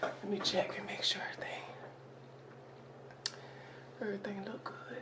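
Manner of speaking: fast, soft whisper, under the breath.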